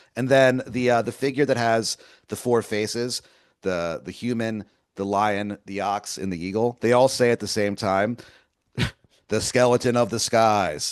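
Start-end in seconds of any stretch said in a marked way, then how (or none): none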